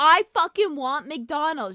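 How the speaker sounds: put-on loud, demanding yell, teenage girl voice. Retelling a fifteen-year-old demanding McDonald's from her mom: imitating a teen yelling. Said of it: "yelling at her mom".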